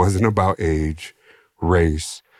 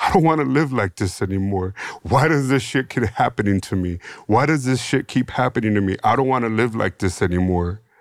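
put-on crying, pleading tone; 5 semitones higher than usual. Retelling what they said to him on the phone, imitating own crying. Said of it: "I was just crying and saying".

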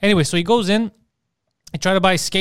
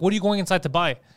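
ordinary delivery

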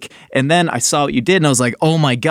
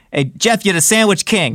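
put-on New York accent, pitched up; 5 semitones higher than usual. Imitating the chef who gave the nickname: Bobby Flay New York accent. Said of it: "he's got that New York accent".

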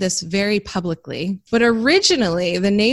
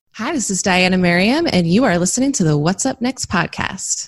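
radio announcer voice, broadcast-style delivery. Host opening the What's Up Next podcast: radio voice. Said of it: "That was like my radio voice".

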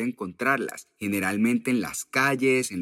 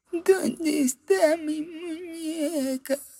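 very high, tiny little doll's voice. Imagining coming home from the island of dolls to a voice asking, tiny little voice. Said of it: "lo sorprendan con una vocecita que dice".

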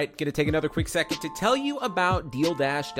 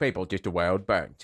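put-on voice of an older English man; 8 semitones lower than usual. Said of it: "my Michael Caine impression".

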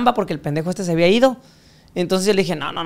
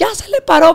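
put-on shrill excited yell, higher and louder; 11 semitones higher, 6 dB louder than usual. Retelling how his partner shouted the news: imitating a shrill excited shout. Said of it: "Y la mía que grita".

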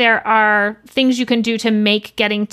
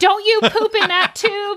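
put-on screaming, much higher; 10 semitones higher than usual. Retelling a moment with the baby, not knowing what to do: imitating own screaming. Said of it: "I'm like screaming like".

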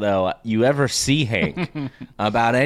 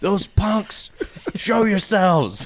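furious, fuming voice pitched up; 8 semitones higher than usual. Retelling a scene where Hank storms out over an alarm: imitating Hank fuming.

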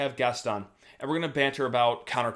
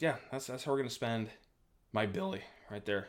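voice cracking, breaking up mid-line; 7 dB quieter than usual. Talking to the listeners, the host's voice cracks mid-sentence: voice cracking. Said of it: "as my voice cracks solidly right there".

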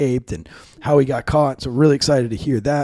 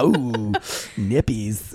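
mock campy, flamboyant put-on voice, lower pitch; 3 semitones lower, 3 dB quieter than usual. Trading silly words with another speaker for laughs: mock campy flamboyant delivery.

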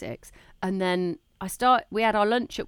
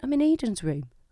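put-on, hushed, really quiet voice, quieter; 5 semitones higher than usual. Retelling his reply on the phone when asked where he was, really quietly. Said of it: "he answered really quietly".

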